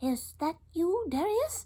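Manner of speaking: tiny, small, unsure, uncertain, very high voice. Narrating a story, a hidden character answers Darius from a thicket in a tiny, uncertain voice. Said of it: "came a tiny, uncertain voice".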